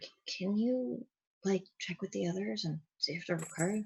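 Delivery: secretive, very quiet half-whisper. Playing a character, half-whispering aside to Resnick: half-whisper. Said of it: "I'm gonna whisper to Resnick".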